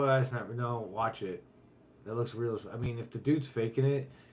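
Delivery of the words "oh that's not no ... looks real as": normal talking voice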